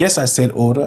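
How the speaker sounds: ordinary talk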